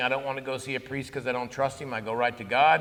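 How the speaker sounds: usual speaking voice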